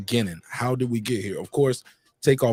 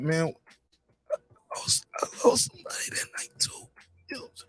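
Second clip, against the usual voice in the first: mock dramatic, slow, voice cracking, almost crying; 6 semitones higher, 6 dB quieter than usual. Retelling the uncle's line in a dramatic acting voice, imitating voice cracking, almost crying. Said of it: "put on my my dramatic acting voice".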